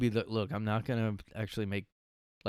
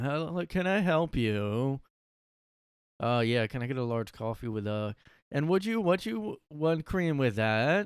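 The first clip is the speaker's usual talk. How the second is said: slow, dragging speech with weird inflection; 4 semitones higher than usual. Mocking how the video narrator would sound ordering coffee: imitating slow speech, weird inflection.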